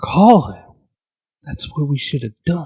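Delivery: very low, deep, muttered aside. Voicing a character muttering in the corner: under his breath. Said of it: "just under his breath".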